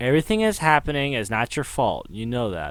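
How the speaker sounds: ordinary delivery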